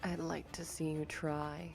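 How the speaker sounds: voice deep as the abyss, lumbering. Voicing a presence answering a threat in a character's mind: voice as deep as the abyss. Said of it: "hear this voice as deep as the abyss itself lumbering".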